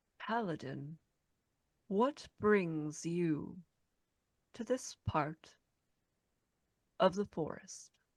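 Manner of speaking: forest creature voice, understated and low-key. A game narrator voices a creature addressing the paladin, in a low voice. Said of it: "it speaks to you in this sort of low voice and says".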